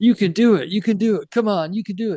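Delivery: put-on very high chorus of eager kid cheering. Retelling a video where kids urge another kid down a jump: imitating kids encouraging. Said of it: "and they're all like".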